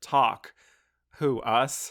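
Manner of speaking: loud, very bitter, sarcastic put-on voice. Quoting a woman's reply when a man asks to talk, in a mock-bitter tone. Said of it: "With that, like, very bitter tone".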